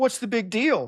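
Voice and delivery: naive, dismissive tone.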